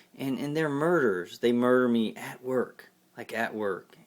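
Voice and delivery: ordinary talk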